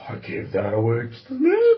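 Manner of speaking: animated, swooping grandfather voice. Telling a story about the family sailboat, the speaker is imitating grandpa's voice. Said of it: "That's my grandpa's voice".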